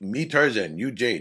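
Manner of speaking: put-on broken English. Explaining how stilted wording would come across, demonstrating Tarzan-style broken English. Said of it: "you would sound like that".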